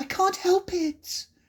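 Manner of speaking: very high, small, meek voice. Narrator reading Alice's reply to the Dormouse beside her, very meekly. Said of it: "said Alice very meekly".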